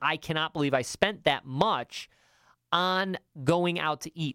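ordinary talk

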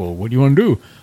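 horrible, badly done fake Jamaican accent. Retelling what a man asked him back then, in a horrible Jamaican accent. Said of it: "I'm going to do a really horrible Jamaican accent".

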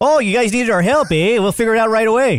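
put-on Canadian accent. Joking that Canadians will help out, in a put-on Canadian accent. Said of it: "That's my Canadian accent".

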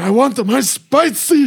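very high, shrill, drawn-out, worked-up angry voice. Retelling what an angry man said after being turned down, imitating an angry man. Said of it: "getting all angry".

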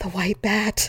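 whispered voice. Retelling waking up the next morning and whispering aloud, whispered. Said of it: "I whispered out loud".

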